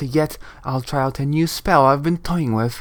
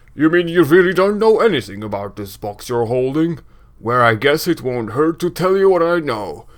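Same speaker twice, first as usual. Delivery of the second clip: raised, booming game character voice. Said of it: "I'm gonna stop doing the booming voice".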